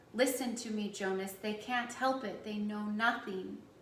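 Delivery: ordinary delivery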